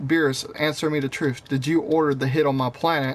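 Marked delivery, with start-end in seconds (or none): none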